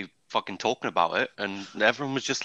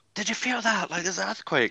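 acted, high-pitched, raised shouting call; 9 semitones higher than usual. Retelling mum's words during an earthquake: imitating mum shouting. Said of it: "my mum shouting".

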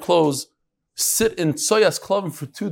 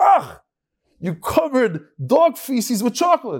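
acted-out, high, drawn-out screaming outburst; 7 semitones higher, 3 dB louder than usual. Telling a joke where the guy bites the chocolate: imitating someone screaming. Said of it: "he starts screaming".

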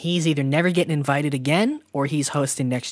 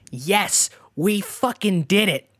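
play-acted, high, excited, triumphant victory cheer; 5 semitones higher than usual. Retelling how Conan got on stage with the writers, clapping and cheering, imitating Conan screaming. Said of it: "Conan is there screaming".

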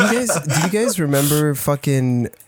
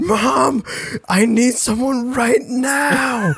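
very high, mock terrified scream, held long; 10 semitones higher than usual. Recalling waking up scared as a child and calling for Mom, retelling a scared scream. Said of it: "and I just screamed".

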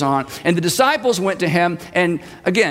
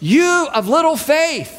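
loud, high-pitched call; 9 semitones higher than usual. Acting out Jesus answering the disciples in the storm: saying loudly as Jesus. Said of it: "he says loudly".

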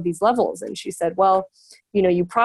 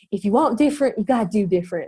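put-on quick, loose, rough Southern accent. Quoting a favorite encouraging line from Tani Raw: Tani Raw's Southern accent. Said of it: "in her amazing Southern accent that I can't recreate".

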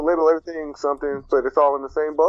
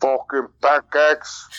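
put-on Russian accent. Asked to say a phrase in a Russian accent, now doing it: Russian accent. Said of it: "Can you do a Russian fucking pancakes?".

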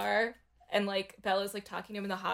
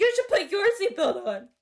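put-on scream, much higher, louder; 11 semitones higher, 8 dB louder than usual. Recounting a scene about a driver stopping in front of people, retelling a scream.

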